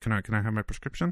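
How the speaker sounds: mumbled, very quiet. Showing how she says it when she has to ask: mumbled, real quiet. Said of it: "I just have to mumble it. ... Like, real quiet".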